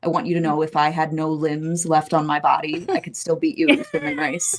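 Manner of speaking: completely earnest, dead-serious, grave tone. Retelling a bet about a swimming race: retelling a serious line. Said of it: "I just got so serious".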